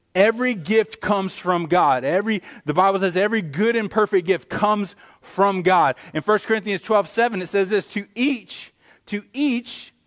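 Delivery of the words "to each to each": voice cracking, breaking high on each. Quoting a Bible verse aloud to listeners: voice cracking. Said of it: "my voice just cracked".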